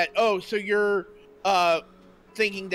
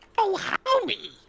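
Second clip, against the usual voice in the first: put-on squeaky old granny voice, very high; 12 semitones higher than usual. Playing a grandma in a group scene: put-on grandma voice. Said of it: "I know we're going for a grandma voice".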